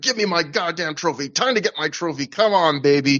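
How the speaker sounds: wrestler-style screaming. Recapping a wrestling match, quoting a fired-up wrestler: imitating a wrestler screaming. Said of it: "He's screaming".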